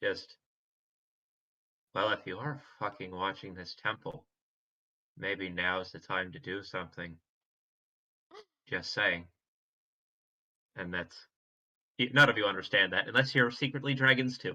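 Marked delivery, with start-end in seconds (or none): 1.9-9.3 muttered under breath, quieter. Player's character mutters aside during a tabletop game, muttering under breath. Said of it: "mutter under my breath in the dragon".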